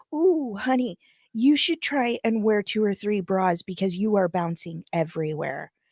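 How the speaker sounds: mock condescending delivery. Retelling what a woman with a tiny dog said: imitating a woman's remark. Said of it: "she goes".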